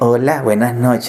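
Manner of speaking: calm, gentle, very low-pitched voice. Showing a pastor how to speak to people: soft, quiet voice. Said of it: "Usted habla así... Más bajito... así bajito".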